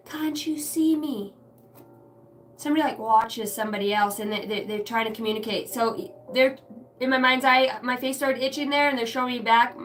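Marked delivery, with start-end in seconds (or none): 0.1-1.3 put-on British accent, slow and high. Describing a voice heard in the mind, the speaker repeats its words in a British accent. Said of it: "it's in a uh, British accent too".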